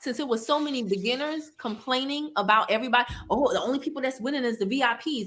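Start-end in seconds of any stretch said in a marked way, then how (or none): none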